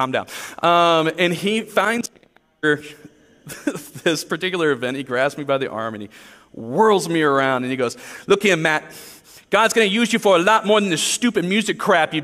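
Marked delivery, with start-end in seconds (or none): 8.3-12.2 put-on fast, high-pitched Boston accent, rattled off. Retelling a man who grabbed him by the arm and spoke, in a Boston accent impression. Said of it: "This guy talked like this".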